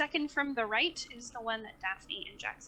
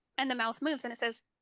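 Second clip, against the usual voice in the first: ordinary delivery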